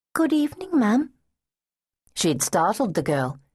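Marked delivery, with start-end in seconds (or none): 0.1-1.1 polite, respectful, a little unsure and hesitant, pitched up. A girl greets someone much bigger she takes for an adult, respectful, a bit hesitant. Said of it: "her tone was respectful, if a bit hesitant".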